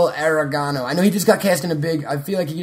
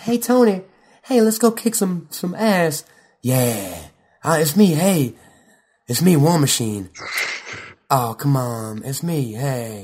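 very slow, low-key, understated, drawn-out drawl. Complaining that he was too quiet for War Machine, do a soft-spoken Terrence Howard impression. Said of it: "He was so fucking soft-spoken".

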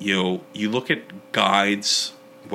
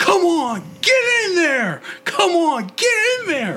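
acted, very high, loud, furious swooping yell; 5 dB louder than usual. Recalling a man screaming at him on his first permit, retelling a scream. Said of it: "where he's screaming at me".

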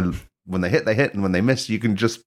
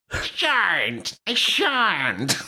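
put-on cartoon boy voice, higher; 10 semitones higher than usual. Doing a made-up Bart catchphrase in reply: imitating Bart Simpson's catchphrase. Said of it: "Bart's catchphrase".

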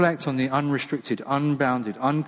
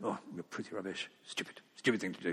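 muttering, much quieter, lower; 5 semitones lower, 14 dB quieter than usual. Describing what they catch themselves saying, muttering under breath. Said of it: "under my breath".

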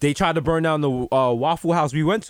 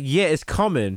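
plain

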